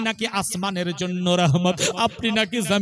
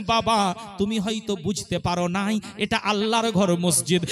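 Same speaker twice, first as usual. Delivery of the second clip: ordinary talk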